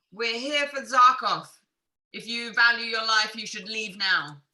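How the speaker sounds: very loud shout, pitched high. In a game, the speaker's character shouts at unseen people moving around nearby: shouting. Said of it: "Then I will shout like".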